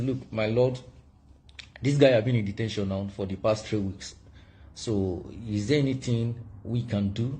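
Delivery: ordinary talk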